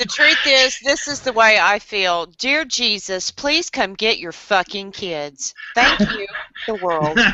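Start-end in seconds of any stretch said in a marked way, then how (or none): 2.3-7.2 fed-up, exasperated motherly pleading voice. Joking with friends about kids, a mock prayer sounding like a mother. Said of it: "you sound like a mother".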